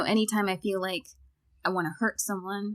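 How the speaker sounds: usual speaking voice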